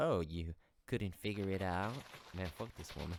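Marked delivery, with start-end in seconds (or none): 0.0-2.0 mock, condescending, put-on pitying tone. Retelling how a woman reacted to the speaker's scarf; mimicking a pitying voice. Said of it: "said in this pity voice".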